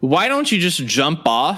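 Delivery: mild, half-screamed yell. Voicing Marty as he looks at a player: screaming. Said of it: "Marty looks at you and screams".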